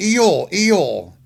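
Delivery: put-on Southern accent. Retelling what a lady said during a group discussion, in a thick accent. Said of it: "their accents are so thick".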